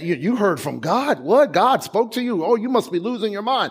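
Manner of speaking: derisive, incredulous jeering with scoffing disbelief. Retelling how people in a movie ridiculed a man, imitating people ridiculing. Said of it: "they started to rid-, ridicule him".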